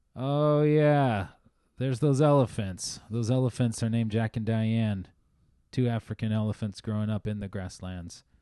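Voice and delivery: play-acted dry, wry, droll deadpan skipper's spiel. Retelling a ride, the speaker imitates the skipper introducing the elephants: imitating the skipper's droll voice. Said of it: "in her like kind of droll voice said".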